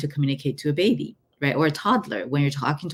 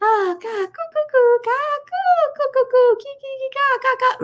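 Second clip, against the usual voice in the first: put-on very high, tender, gentle baby-talk babbling; 4 dB louder than usual. Showing how one answers a baby: raised, softer voice for a baby. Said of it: "raising your voice and put it in a softer tone".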